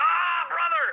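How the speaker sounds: loud, high, agonized wrestler-style pained scream. Retelling a wrestler going down hurt: imitating a wrestler screaming in pain. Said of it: "He's screaming".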